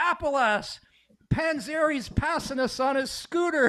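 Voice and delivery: mock very high, teasing, drawn-out yell. Retelling a joke shouted from the back of the bus: imitating Pitter yelling. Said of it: "he's yelling at Appalass".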